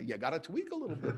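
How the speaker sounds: put-on elderly man's voice and cadence.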